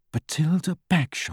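soft, quiet murmur under the breath. Hermione repeats a name while tracing it on a book cover, murmured. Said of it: "murmured Hermione".

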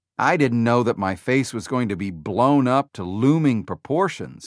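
ordinary delivery, nothing marked

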